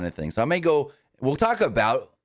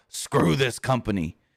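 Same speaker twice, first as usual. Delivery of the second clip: put-on angry, pissed-off delivery. Retelling a wrestler's line in the ring: imitating a pissed-off line. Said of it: "pissed off".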